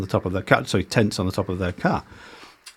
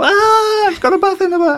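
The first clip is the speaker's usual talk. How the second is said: high, loud squeal of amazed delight. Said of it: "they go".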